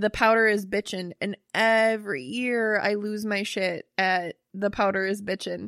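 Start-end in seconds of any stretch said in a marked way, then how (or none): none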